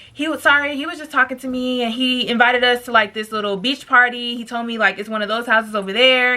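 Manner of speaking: usual speaking voice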